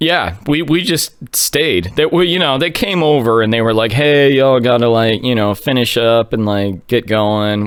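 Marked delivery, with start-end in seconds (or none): none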